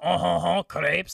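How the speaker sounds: bad, fake, clumsy American-sounding French accent. Imitating an american doing a french accent for a french person: bad fake french accent. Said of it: "watched an American person go".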